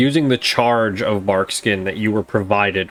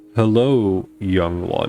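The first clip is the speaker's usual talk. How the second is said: deep, low, rumbling giant tree voice, swooping; 2 semitones lower than usual. A storyteller voices the great Ent speaking to the listener; low, rumbling Ent voice. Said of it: "you hear a low and rumbling voice that says".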